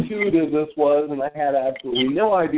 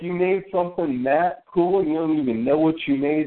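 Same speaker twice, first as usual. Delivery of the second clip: ordinary talk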